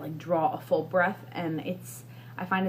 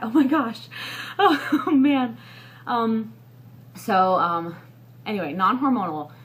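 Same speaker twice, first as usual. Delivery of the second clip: winded, out-of-breath, high gasping exclamation; 3 semitones higher, 6 dB louder than usual. Pregnant speaker discussing birth control options after talking at length: out of breath. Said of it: "I'm just out of breath from doing that".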